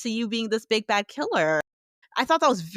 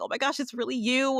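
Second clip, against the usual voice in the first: voice flooded with emotion, an overcome outburst; 4 semitones higher, 4 dB quieter than usual. Retelling a character who hears a voice he thought lost: imitating someone overcome with emotion. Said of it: "he's just so overcome".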